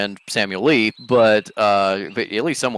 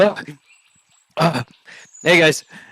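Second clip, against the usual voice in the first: flustered, frazzled, harried, stressed, pitched-up voice; 6 semitones higher than usual. A hotel worker comes through the dining room doors to greet the group, harried and stressed. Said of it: "clearly like stressed and goes".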